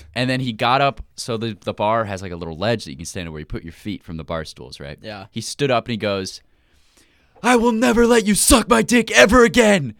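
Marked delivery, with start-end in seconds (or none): 7.4-9.7 very loud, shrill, top-of-the-lungs scream. Telling about a man who stood up in a full bar, retelling a scream. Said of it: "screamed it at the top of his lungs".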